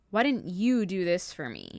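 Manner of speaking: mock pointed, accusatory tone with swooping pitch. Retelling a husband asking about his unwashed cup: accusatory tone. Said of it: "it was very accusatory".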